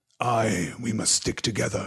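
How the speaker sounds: growled, growling voice. An Uruk-hai answering the others he distrusts, growled. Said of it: "growled Ugluk".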